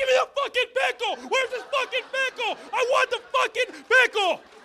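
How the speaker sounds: mock sudden fed-up snapping outburst, very high pitch. Retelling how he finally snapped after a long list of questions, imitating someone snapping. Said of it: "he snaps like".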